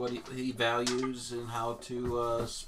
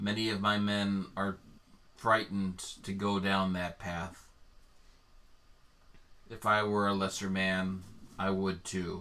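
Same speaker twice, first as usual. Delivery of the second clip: tone eased down, confiding; 4 semitones lower than usual. Narrating a character speaking to the group, in a softer voice. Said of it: "And in a softer voice he says".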